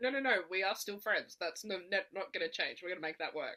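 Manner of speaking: firm, pushy, slightly aggressive insistence. Acting out the friend's reply about staying friends: imitating a friend, a little aggressive. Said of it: "she was a little bit aggressive about it".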